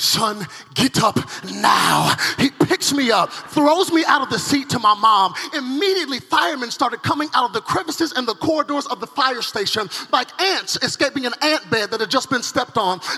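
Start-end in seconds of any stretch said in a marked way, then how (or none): 0.0-2.1 put-on very slow Nigerian accent. Quoting his father during a fire alarm at the fire station, Nigerian accent. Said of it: "in his Nigerian voice saying".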